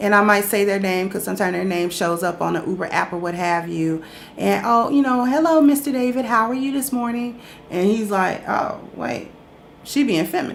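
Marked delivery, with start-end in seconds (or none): 5.3-7.4 inviting customer service voice, higher pitch. A rideshare driver greeting a passenger by name, in an inviting customer service voice. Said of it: "My customer service voice is a little bit more inviting and it's raised a pitch or two".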